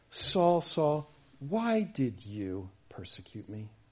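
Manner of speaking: gentle, tender, slow swooping pleading tone. Quoting a gentle question to a persecutor: Jesus speaking with put-on tenderness. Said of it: "Listen to the tone of Jesus' voice".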